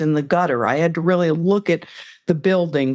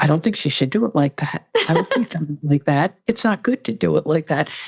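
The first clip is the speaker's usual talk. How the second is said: very small, tiny, shrunken voice. Describing a shower routine, the speaker suggests saying this in a very small voice. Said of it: "say in a very small voice".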